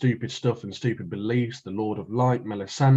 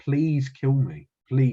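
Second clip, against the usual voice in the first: put-on tearful, pleading voice; 2 semitones higher than usual. Retelling a TV scene, imitating the Hound almost crying. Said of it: "he starts, like, almost crying".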